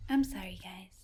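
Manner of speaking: put-on babyish, childish baby-talk delivery. Imitating her strange apology in the baby voice she sometimes uses. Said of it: "she kind of talks in like a baby voice sometimes".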